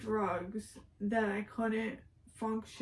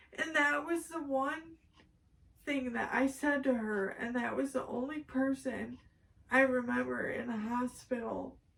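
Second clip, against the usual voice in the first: tearful, speaking through tears; 2 semitones higher than usual. Telling a story about best friend Tori, crying while speaking. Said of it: "I'm sorry I'm crying".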